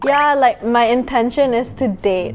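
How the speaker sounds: normal talking voice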